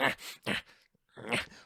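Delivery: unvoiced, breathy character grunting. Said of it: "Penguin's grunts".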